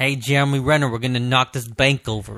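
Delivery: put-on loud thick Boston accent. Recalling a movie he couldn't understand, quoting Ben Affleck's thick Boston accent. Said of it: "Boston accent".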